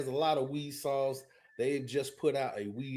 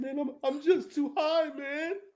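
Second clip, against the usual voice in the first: mock very high, weepy, tearful crying voice; 14 semitones higher, 4 dB louder than usual. Retelling a friend's phone call, imitating a friend crying. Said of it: "He called me crying".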